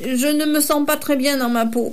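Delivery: halting, sheepish stumbling. Narrator reads a dragon answering the owl witch, stammering, embarrassed. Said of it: "balbutia César embarrassé".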